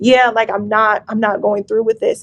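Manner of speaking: ordinary talk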